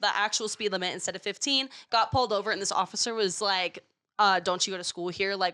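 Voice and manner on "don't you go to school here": put-on angry, upset tone. Retelling being pulled over by an officer: imitating an upset officer. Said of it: "kinda, like, really upset".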